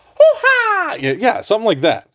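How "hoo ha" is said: put-on cartoon voice, pitched as high as possible. Trying the voice from farther away from the mic, Mario voice. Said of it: "that Mario voice, I can't even go high enough right now".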